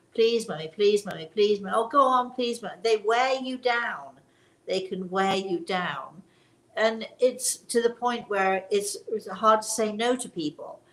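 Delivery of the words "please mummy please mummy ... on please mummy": fast, rattled-off, nonstop pleading tone. Explaining how persistent people wear you down: imitating a pleading child. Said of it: "it's like a child".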